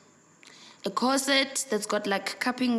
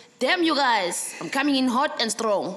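plain

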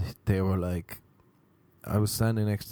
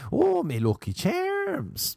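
high, slow, stretched-out leprechaun voice with Irish brogue. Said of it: "There's one".

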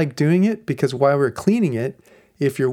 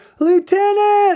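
mock, very high, loud shout; 5 dB louder than usual. Retelling a policeman calling for the lieutenant: imitating a policeman yelling. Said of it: "And he just yells".

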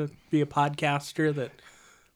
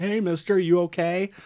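loud, high-pitched yelling. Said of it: "he starts yelling at him".

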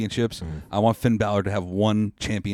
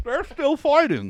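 deliberately bad version, done high-pitched.

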